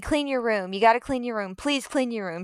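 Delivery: put-on pleading, repeated nagging, begging. Retelling what mom told a stubborn child: imitating mom begging. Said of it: "She's begging me".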